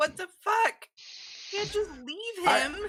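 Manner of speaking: furious shout, very high-pitched, shrill and very loud. Voicing a character chasing someone who runs off: shouting in character. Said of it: "Yogi's gonna shout at her".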